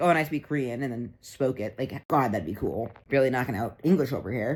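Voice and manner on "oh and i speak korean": ordinary talk, nothing marked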